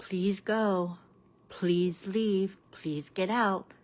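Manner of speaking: soft, sweet, overly nice, polite pleading tone. Showing how not to tell someone to leave: nice, sweet pleading. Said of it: "You can't be nice and so sweet and go".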